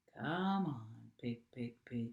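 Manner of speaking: very low, soft, kindly coaxing voice. Narrator reading a man coaxing a pig back toward the barnyard, low, kind voice. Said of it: "said Mister Zuckerman in a low, kind voice".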